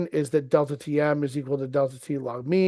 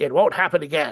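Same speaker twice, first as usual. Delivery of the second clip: put-on cartoon character voice. Voicing a cartoon character's line in a Butthead voice. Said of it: "I'm trying to do his voice".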